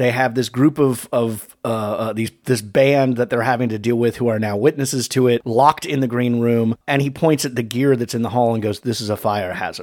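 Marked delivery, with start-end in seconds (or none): 8.8-9.8 mock delivery weighted with real menace. Retelling a villain's line about gear in the hall: imitating a menacing line. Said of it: "you're saying it with such menace".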